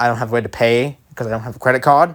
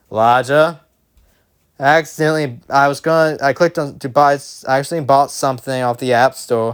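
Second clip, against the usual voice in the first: ordinary delivery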